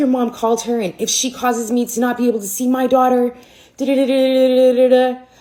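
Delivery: put-on angry voice. Retelling a phone call from a pissed-off man about the speaker's mom, imitating his anger. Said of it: "he was pissed".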